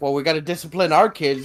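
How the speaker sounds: ordinary talk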